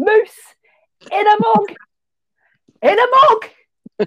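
very high, very loud, drawn-out, thick Lancashire shriek. Speaker reenacts screaming at the exec chef and pastry chef: retelling a thick northern scream. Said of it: "Really northern".

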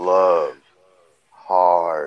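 said very slowly, words spaced out. Explaining how it has to be said, the speaker says it very slowly. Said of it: "so you got to say it real slow".

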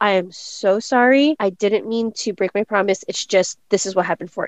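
ordinary talk, nothing marked

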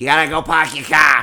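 put-on Boston girl accent. Answering a question about the Boston girl accent: Boston accent. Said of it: "what about the Boston girl accent?".

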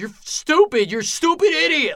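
loud, high, angry yelling. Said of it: "the other guy's yelling at him".

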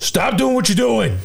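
shrill, raspy, very high, rough yell. Retelling how they discipline their kids: imitating own yell at kids. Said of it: "A yell".

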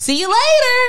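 very high, loud, called-out yell. Retelling how a nervous girl called out before closing the door, retelling a yell with a big smile. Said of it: "she yells with a big old smile".

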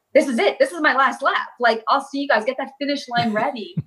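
mock, high-pitched calling out. Retelling calling out to everyone on the last race lap: imitating own past scream. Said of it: "I'm screaming to everyone".

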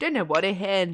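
really bad, fake put-on Scottish accent. A podcast host, just after reading out a listener's comment: bad scottish accent. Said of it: "I keep doing really bad Scottish accents".

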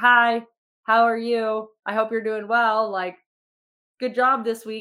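worn-out, slow, flat, going-through-the-motions tone. Imitating own check-in messages sent while exhausted: imitating own exhausted self. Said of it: "you're gonna get a different [name]".

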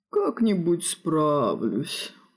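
dismissive, brushing-off tone. A vampire, told by a mage that he must move away, answers dismissive. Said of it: "отмахнулся вампир".

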